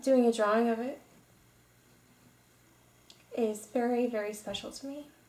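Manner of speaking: choking up, voice catching with emotion. Talking about drawing a cherished photo of her daughter: choking up. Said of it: "I'm starting to kinda choke up right now".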